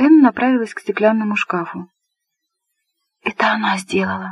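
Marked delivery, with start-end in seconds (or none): 3.2-4.3 barely voiced, hushed, whispered words. Narrator reads a woman who has just walked over to a glass cabinet, whispered. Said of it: "прошептала она".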